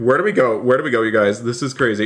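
frightened, nervous, urgent voice. Asking where to flee while being chased: scared. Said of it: "I'm scared".

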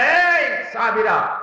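roaring, rebuking tone. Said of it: "হুঙ্কার দিয়ে বললেন".

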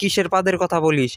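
ordinary delivery

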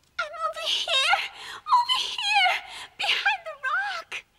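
high, straining shout. Trapped behind a rock, calling to searchers: shouting to be heard. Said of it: "Try and shout a bit louder!".

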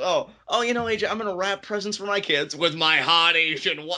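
mock gloating voice. Retelling Carl Anderson's answer about Christmas: imitating Carl Anderson's smug tone. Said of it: "I love how he says it with a tone".

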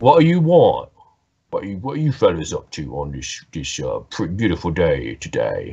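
low, sing-song, sarcastic sailor voice, feigned cheer. Voicing a haunted sailor eyeing approaching players: sarcastic sailor voice. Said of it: "he's clearly, like, being sarcastic".

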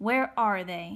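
hard, insistent, demanding tone. Trumbull, having caught the boy, questions him closely: demanding. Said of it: "he demanded".

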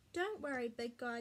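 plain

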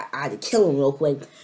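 ordinary talk

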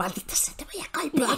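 muttered quietly under the breath.

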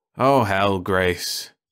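wearily. A man answers his companion's complaint about the food, weary. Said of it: "the man said wearily".

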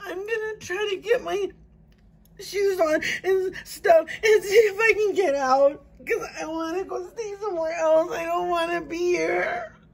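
tearful, crying, panicking speech. Seeing fire trucks from the window and wanting to get out; crying, panicking. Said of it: "I don't know why I'm crying, but I'm panicking".

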